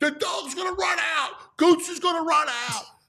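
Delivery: shrill, very high put-on screaming. Retelling the wife screaming about the dog at a delivery: imitating someone screaming. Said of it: "screaming at me".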